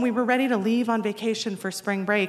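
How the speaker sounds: plain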